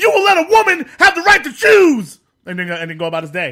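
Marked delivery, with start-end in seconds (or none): 0.0-2.2 loud, high-pitched yell. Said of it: "he just stands over them like".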